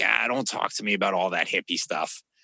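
put-on broad, gruff Boston tough-guy accent, laid on thick. Imitating a tough-guy coaching prospect turning down talk of self-love, heavy Boston accent. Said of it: "He's got the heavy Boston accent".

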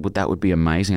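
ordinary talk

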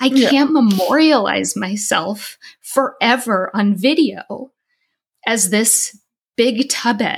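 words breaking through tears. Recalling gaining weight before being filmed, speaking while crying. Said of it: "I am crying now".

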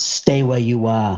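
mock-menacing, put-on menacing delivery. Speaker recounts a voice heard behind their ear, retelling a menacing voice. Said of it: "he said it in such a menacing manner".

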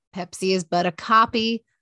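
normal talking voice

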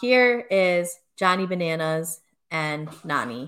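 ordinary talk

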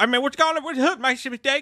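very high-pitched, heavy, extreme rural twang. Getting their car worked on, speaker imitates a guy who comes out, extreme redneck accent. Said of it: "somebody else that has an extreme redneck accent".

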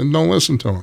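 ordinary delivery

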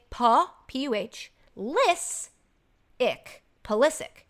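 LIS in Pulisic emphasized. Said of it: "capitalize the syllable ... we're supposed to emphasize".

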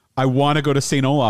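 ordinary talk, nothing marked

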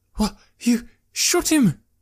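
halting, very high, slow stammer. Still-stunned Jekram asks Malik whether he shot the man, stammering. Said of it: "he stammered".

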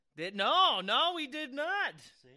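shouting. Arguing with the other speaker about the sound setup: yelling. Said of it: "Look, you're yelling".

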